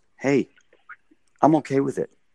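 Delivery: gently reassuring, sweet, easygoing, pleasant tone. Retelling how he responded to the speaker, imitating his calm, sweet tone. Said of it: "he just responded to me very calmly, sweetly".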